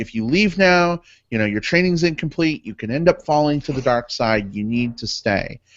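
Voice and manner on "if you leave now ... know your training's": plain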